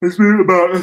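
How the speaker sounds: talking through a yawn. A speaker addressing viewers, who then apologizes for yawning on them. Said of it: "Sorry for uh, yawning on you guys".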